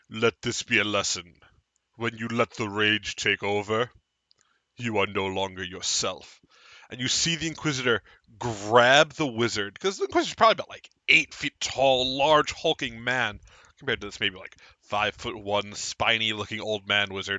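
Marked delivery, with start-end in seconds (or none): 0.1-6.3 low, deep, grave, gravelly voice. A storyteller voices the Inquisitor addressing everyone, in a low, grave, gravelly voice. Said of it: "in a low, grave, gravelly voice goes".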